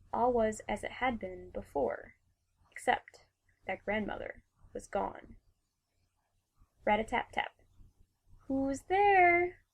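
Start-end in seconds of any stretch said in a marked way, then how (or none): 8.4-9.4 very high-pitched, loud put-on voice. Narrator reads the Wolf answering a knock at the door, in a high voice. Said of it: "the Wolf says in a high voice".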